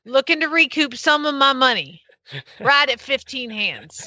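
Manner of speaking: exaggerated, put-on Southern drawl. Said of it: "I can talk like this 'cause this is how my daddy sounds".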